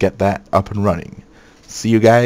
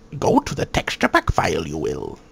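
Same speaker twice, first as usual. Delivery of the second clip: crappy put-on character voice, hushed and soft; 4 semitones lower, 5 dB quieter than usual. Explaining a step while editing: crappy Yoda impression. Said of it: "my crappy impression of Yoda".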